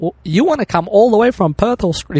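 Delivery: put-on American accent. Retelling what a stand-up school contact asked him on the phone, American accent. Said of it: "This is my American accent".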